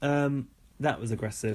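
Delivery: ordinary delivery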